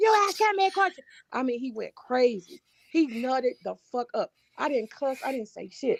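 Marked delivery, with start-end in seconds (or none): 0.0-1.0 put-on screaming rant, higher and louder. Retelling how another streamer screamed at a question: imitating someone screaming. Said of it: "He started screaming to the top of his lungs".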